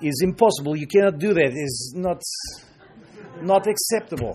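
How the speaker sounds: very slow, heavy, put-on Russian accent. Speaker acts out the Russians' reply to an invitation, in a Russian accent. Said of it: "That's my Russian accent for you".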